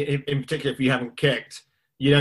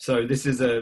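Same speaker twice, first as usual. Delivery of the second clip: ordinary delivery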